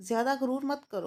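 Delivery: plain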